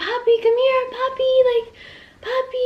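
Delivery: coaxing, friendly, very high-pitched calling yell. Retelling bolting out of the car to find a puppy, retelling a friendly yell. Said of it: "like I'm yelling ... trying to keep it like a nice, like friendly voice".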